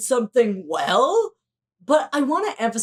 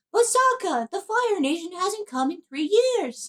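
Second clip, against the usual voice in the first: pitched-up voice, objecting and arguing back; 8 semitones higher than usual. Acting out a scene from the show in a Katara impression. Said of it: "That's my Katara impression".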